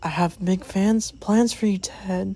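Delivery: soft, hushed, very creepy voice. Retelling a scene where Donnie, unmasked, speaks to Ted; Donnie's creepy voice. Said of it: "Donnie talks in a very creepy voice".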